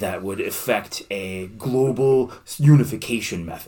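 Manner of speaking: put-on deep, authoritative voice. Pitching a new product on request, put-on deep Elizabeth Holmes voice. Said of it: "talk about your new product in a real deep voice".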